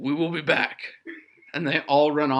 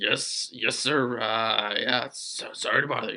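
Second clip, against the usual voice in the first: embarrassed, flustered, lower and quieter; 4 semitones lower, 4 dB quieter than usual. Voicing guards apologizing to an officer after hearing shouting: flustered guards. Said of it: "rather flustered".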